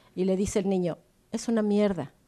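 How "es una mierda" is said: mock muttering through teeth, lower. Retelling a film scene where a boy answers his father: imitating muttering through teeth. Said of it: "le contesta así como entre dientes".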